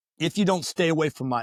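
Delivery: ordinary talk, nothing marked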